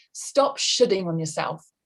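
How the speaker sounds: usual speaking voice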